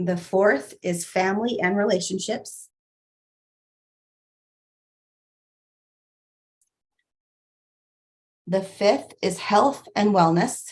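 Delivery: slow, deliberate, carefully paced, item by item. A speaker lists their life areas to the audience, speaking slowly. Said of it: "I'm going to tell them to you slowly".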